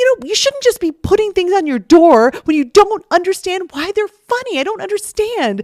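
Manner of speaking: mock furious, very high, angry rant. Retelling a scene where she gets mad at him: imitating someone angry. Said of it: "she gets so mad at him".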